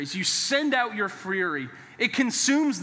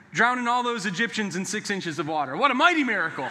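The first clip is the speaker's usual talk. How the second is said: ordinary talk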